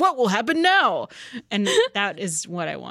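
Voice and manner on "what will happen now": put-on game announcer voice. Chatting about game announcers, one speaker quotes a line: Street Fighter 4 announcer impression. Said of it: "The announcer from Street Fighter 4 is also hilarious because he says things like".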